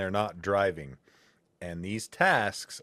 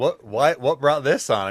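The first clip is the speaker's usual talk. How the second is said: put-on surprise, higher and louder; 5 semitones higher, 9 dB louder than usual. Retelling own reaction to someone's sudden haircut plan: retelling own surprised reaction. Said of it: "I'm like".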